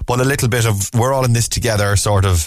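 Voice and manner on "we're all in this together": ordinary talk, nothing marked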